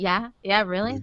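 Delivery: imitated deadpan delivery. Imagining how another speaker replies to people: imitating a deadpan reply. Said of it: "I literally imagine you just going".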